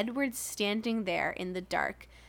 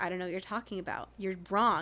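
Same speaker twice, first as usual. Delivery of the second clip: mock-calm stern voice, faster. Describing a movie's gaslighting, imitating a character's calm, stern voice. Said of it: "that very calm".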